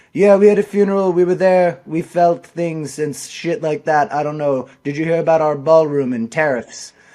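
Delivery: loud, careless, indifferent, offhand rambling delivery. Retelling how a politician answers interview questions: imitating Trump. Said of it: "Trump's like".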